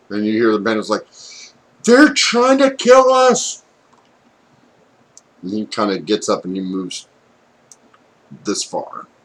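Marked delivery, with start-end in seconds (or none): 1.8-3.6 very high, very loud, drawn-out, alarmed shriek. Voicing a bandit who wakes as he's attacked: bandit screaming in alarm. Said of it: "As he's screaming profusely".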